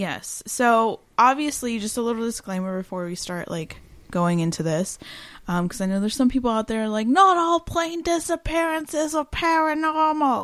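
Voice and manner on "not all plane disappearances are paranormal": fake British accent, pitched high. Imitating some people out there who would object: put-on british accent. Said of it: "Why are they British?".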